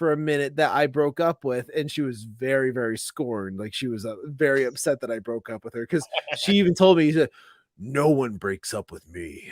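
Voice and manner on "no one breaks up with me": very low, deep, slow manly voice. Retelling what an ex-girlfriend said after the breakup, mock manly voice. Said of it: "it almost got into this like real like manly voice".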